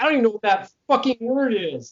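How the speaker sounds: high, loud exasperated outburst. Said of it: "And I'm like".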